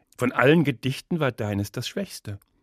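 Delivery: ordinary delivery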